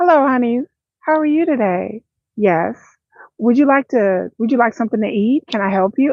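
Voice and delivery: parental talking voice. Showing how she talks around her kids; voice for talking to her kids. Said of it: "Like that's how I talk to my children".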